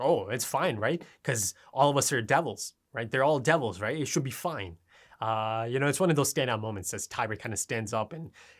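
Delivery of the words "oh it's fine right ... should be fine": ordinary talk, nothing marked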